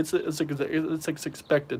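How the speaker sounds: stammering, repeating words. Reacting to haters while answering a quiz, stuttering. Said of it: "Sorry, I'm stuttering".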